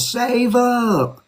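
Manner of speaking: put-on, high, shouted yelled call-out. Telling how a lady at the back of the room answered his question: retelling a woman's yell. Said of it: "another lady in the back of the room yelled".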